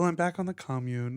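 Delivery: put-on British received pronunciation accent. Contrasting a whiny voice with how the video maker says it: imitating Beau's British RP accent. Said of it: "and of course the accent".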